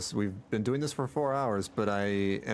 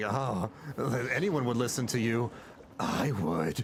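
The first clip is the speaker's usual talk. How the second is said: mock, overdone, syrupy sweet tone, laid on thick. Retelling how a game character spoke to their character: imitating someone laying it on thick. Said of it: "Laying it on thick there, lady".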